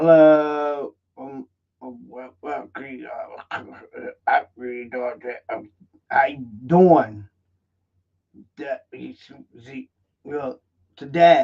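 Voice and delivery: broken-up cutting-out speech with one word stretched. Showing how bad audio quality sounds to viewers: imitating choppy, breaking-up audio. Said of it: "and it'd go like this".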